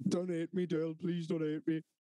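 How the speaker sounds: put-on crying, tearful voice. Retelling a man's plea to Dill, imitating him crying. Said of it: "he'd start crying again".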